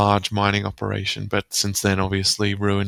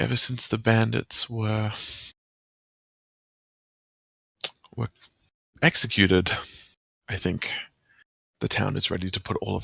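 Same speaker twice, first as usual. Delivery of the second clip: voice dropped low, lowered and hushed; 4 dB quieter than usual. Voicing a character speaking in a scene, in a lowered voice. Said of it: "and he lowers his voice".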